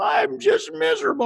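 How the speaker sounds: very high, weepy, sobbing tearful voice. Retelling a student's words as she starts crying: imitating a student crying. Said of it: "And she starts crying".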